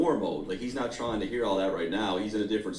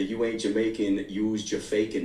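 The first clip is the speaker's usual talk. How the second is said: ordinary delivery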